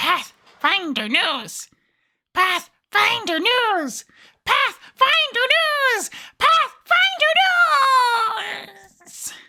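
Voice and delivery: very high goblin voice, "News" drawn out. Opening the news segment in goblin voice. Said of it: "I have to do Goblin voice".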